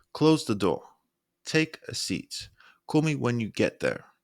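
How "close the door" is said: pitch climbs, then falls sharply on "door". Example instruction showing directness, rise then sharp drop on door. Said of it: "voice rises and then sharp drops".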